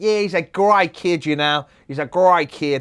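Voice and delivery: put-on Australian accent. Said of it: "he had an Australian accent".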